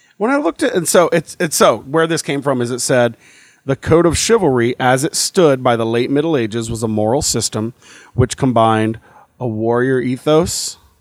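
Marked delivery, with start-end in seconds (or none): none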